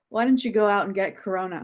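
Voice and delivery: barbed, insulting, jabbing tone. Retelling what mom said to dad, imitating mom insulting dad. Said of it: "my mom to my dad".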